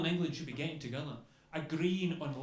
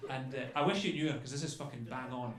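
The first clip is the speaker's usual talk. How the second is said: ordinary talk, nothing marked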